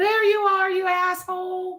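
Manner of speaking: high parrot-like voice. Retelling how the parrot greeted the stepmother: imitating a parrot doing dad's voice. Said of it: "in my dad's voice".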